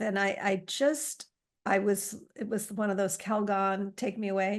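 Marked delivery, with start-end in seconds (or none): none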